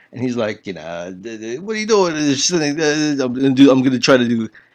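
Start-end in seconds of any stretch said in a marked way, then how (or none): 1.1-2.2 high-pitched voice, stumbling on the first word. Retelling a friend's reply about a monkey story: impression of a friend. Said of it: "my best impression of my friend".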